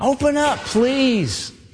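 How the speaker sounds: mock begging and pleading, high pitched. Acting out people locked outside a closed door: acting out pleading at the door. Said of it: "Pleading, begging".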